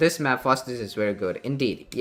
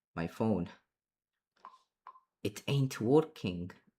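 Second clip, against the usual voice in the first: odd, wonky, put-on Russian accent; 8 dB quieter than usual. Mid-conversation on the phone, briefly joking: weird Russian accent. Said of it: "That was a weird Russian uh, accent I just did there".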